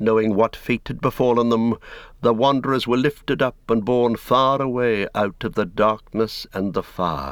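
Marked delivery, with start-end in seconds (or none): none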